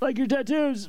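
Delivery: mock, very high, sudden shout. Telling how they shouted at strangers whose backs were turned, retelling own shout. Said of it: "And then I shouted".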